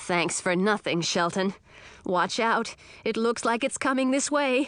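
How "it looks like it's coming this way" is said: ordinary delivery, nothing marked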